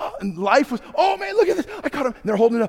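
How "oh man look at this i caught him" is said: mock thrilled, very high excited squealing scream. Retelling people who caught a mouse: imitating excited screaming. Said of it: "They started screaming at the top of their lungs".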